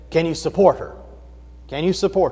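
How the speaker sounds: gruff, rough-edged voice. Retelling a story, he quotes a woman's father questioning her suitor: rough voice. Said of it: "in a rather rough voice".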